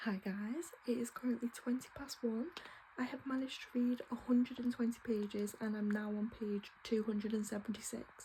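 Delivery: hushed, soft, very quiet whisper. Speaker greeting viewers at night, parents asleep next door, whispering a bit. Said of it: "I am whispering a bit".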